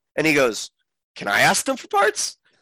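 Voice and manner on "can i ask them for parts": all-excited, eager, pitched-up voice. Retelling a scene from the episode: imitating Din asking excitedly. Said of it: "all excitedly".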